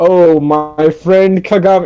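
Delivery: super weird, slow delivery, ga in Kagami stressed. Retelling a scene where a character greets his friend: imitating a weird delivery. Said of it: "he says it super weird".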